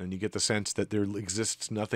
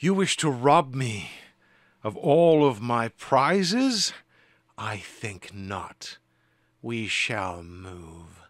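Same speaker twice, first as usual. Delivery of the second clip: loud, strained, forced through clenched teeth; 3 semitones higher, 5 dB louder than usual. The Dreamtaker answers the party before ending the combat, Dreamtaker through gritted teeth. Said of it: "The Dreamtaker grits her teeth".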